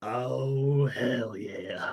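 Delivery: hushed half-whisper with a drawn-out "oh". Voicing a character's half-whispered reply that only one player hears: half-whispering in character. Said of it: "He can reply in a whisper".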